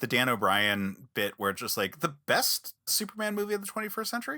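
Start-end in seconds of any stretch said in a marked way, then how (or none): 2.0-4.4 high, rising question-like tune. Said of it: "saying it as your voice kinda goes up into a question mark".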